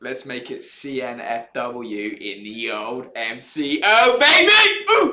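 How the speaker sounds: loud excited yell.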